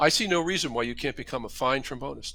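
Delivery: normal talking voice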